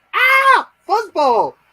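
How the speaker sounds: piercing, high-pitched, shrill scream. Telling Wes how his older brother lifted the mattress, imitating his brother screaming.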